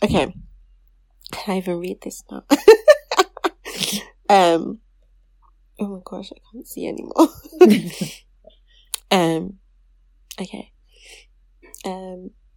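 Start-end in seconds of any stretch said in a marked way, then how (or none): 6.3-7.3 whispered, tearful voice. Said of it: "I should have brought tissue".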